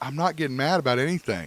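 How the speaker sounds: bothered, audibly upset tone. Denying being mad during an argument about a movie: sounding upset. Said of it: "You sound upset".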